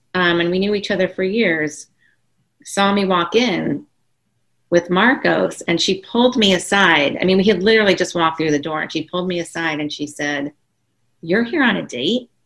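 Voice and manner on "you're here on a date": mock judgmental tone. Retelling a neighbor's question at a party: imitating a judgmental tone. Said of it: "probably with that judgment tone".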